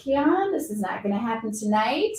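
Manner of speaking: gentle, calm, with no edge. Retelling holding a kid named keon against a wall: retelling calm, gentle words. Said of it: "I just was calm and I just gently said".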